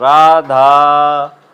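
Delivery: long, drawn-out call of a name. Hindi lesson on the pluta vowel, calling someone: long drawn-out call of 'Radha'. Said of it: "किसी को पुकारने के लिए जब हम तिगुना समय लगाते हैं".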